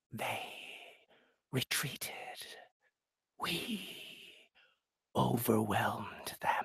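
genderless, whispered, hissing wraith voice. In a drama reading, the wraith answers Nero in a hissing genderless voice. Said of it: "something genderless. Yes. It hissed".

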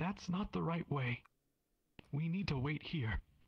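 quivering, trembling, very high voice. Voicing a frightened daughter refusing to climb into the mech: quivering voice. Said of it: "She speaks with a quivering voice".

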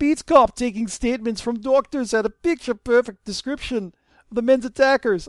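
failing fake Russian accent. Playing a character reporting to a lord in a story, in a bad Russian accent. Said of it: "my Russian accent's dying".

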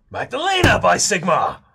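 loud shouted delivery. In an audio drama, a character calls out to someone standing right there: shouting. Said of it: "Stop shouting".

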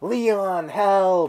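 shrill, very high scream. Reviewing a game, imitating Ashley screaming while locked in a cell. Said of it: "she's fucking screaming".

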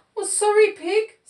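very high, loud, sheepish storybook voice. Narrator reads Sheep speaking to Pig after the shampoo, sheepish. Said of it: "said Sheep sheepishly".

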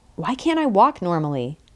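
ordinary delivery

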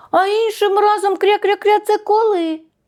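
high, calling out after someone. A duckling calls after a mouse that has already run off, shouting after it. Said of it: "Вигукнуло каченя вслід".

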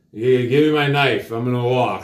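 put-on mumbled, stumbling speech. Retelling what he told the Russian, imitating his own mumbling. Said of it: "talking like this, like mumbling".

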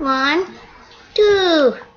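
put-on tiny, squeaky, high little-girl voice. The speaker shows how the other player's little sister would sound: imitating his little sister's voice. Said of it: "As his little sister would sound".

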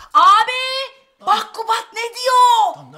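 slow, loud calling out.

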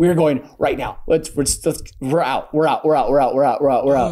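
ordinary talk

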